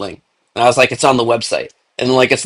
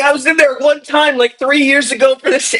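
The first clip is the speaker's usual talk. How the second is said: put-on, angry, heated, beseeching pleading tone; 14 semitones higher than usual. Retelling how a banned user argued: imitating someone pleading angrily. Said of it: "pleading his case".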